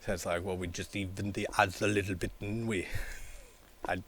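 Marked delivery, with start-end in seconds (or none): 0.4-2.9 poorly put-on Jamaican accent. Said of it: "I can't do a Jamaican accent".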